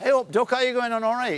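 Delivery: put-on Derby accent. Recalling how one used to talk before acting training: old Derby accent. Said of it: "talking like that all the time".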